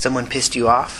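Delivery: ordinary delivery, nothing marked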